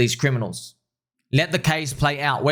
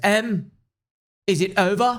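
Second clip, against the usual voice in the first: put-on British accent, high-pitched, very slow and drawn-out; 7 semitones higher than usual. Retell how Faisal once asked you a question, imitating Faisal's British accent. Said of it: "Faisal British accent".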